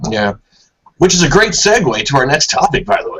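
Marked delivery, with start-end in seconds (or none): 1.0-3.2 put-on broadcast announcer delivery. A host moves on to the next topic, in an announcer voice. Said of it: "it's my announcer voice".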